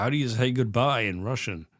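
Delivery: plain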